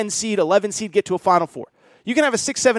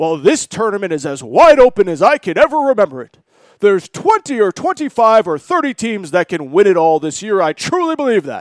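loud sportscaster announcer voice, like on TV; 6 dB louder than usual. Acting out what he says every February about the tournament, do sort of a Jay Bilas voice. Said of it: "that's my sort of Jay Billis voice".

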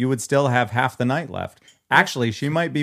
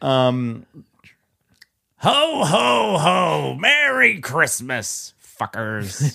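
put-on drunk voice, higher pitch; 2 semitones higher than usual. Asked to do a drunk Santa and trying again: drunk Santa voice, Krusty-like. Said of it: "You're close to Krusty".

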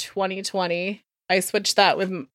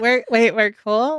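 ordinary talk

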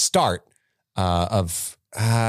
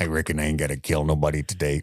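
put-on voice of a hulking old wizard; 6 semitones lower, 3 dB quieter than usual. Joking about a movie scene, doing their own version of Hagrid: Hagrid voice as Sling Blade. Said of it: "That's my Hagrid".

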